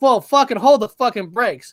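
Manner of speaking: plain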